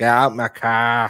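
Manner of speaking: put-on broad Boston accent laid on thick, slow. Retelling what the boyfriend said in a video: imitating a thick Boston accent. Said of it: "he has a thick Boston accent".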